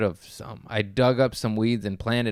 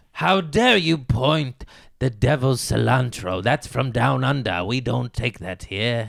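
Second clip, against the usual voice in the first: scary, menacing put-on voice, louder; 2 semitones higher, 5 dB louder than usual. Acting out a bit with another speaker: scary voice. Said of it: "he sounds scary with the voice".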